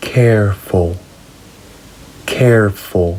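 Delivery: slow careful reading. Showing learners how to say an adjective: reading slowly. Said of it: "Let's read it slowly".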